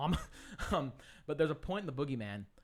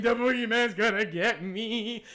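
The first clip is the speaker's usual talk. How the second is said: high, loud, drawn-out, full-throated scream; 9 semitones higher, 10 dB louder than usual. Retelling screaming in the bathroom after a horror movie: imitating own past screaming. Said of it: "I'm just sitting there screaming".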